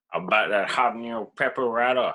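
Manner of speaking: unplaceable put-on western gunslinger accent. Riffing with another speaker, acting out a character bit: Old West gunslinger voice. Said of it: "I don't even know what accent that was".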